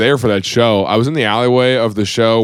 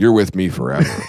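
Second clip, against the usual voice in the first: mock menacing tone, lower pitch; 3 semitones lower than usual. Retelling what his wife says to him, imitating her threatening tone.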